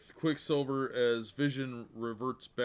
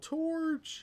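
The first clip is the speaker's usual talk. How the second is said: high mock yell. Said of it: "and they yell".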